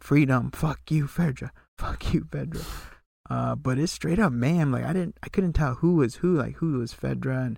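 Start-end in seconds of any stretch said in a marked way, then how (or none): 0.0-2.6 triumphant screaming cry, toned down. Retelling what the hunters shouted during the uprising: imitating people screaming. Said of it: "you hear them screaming, shouting".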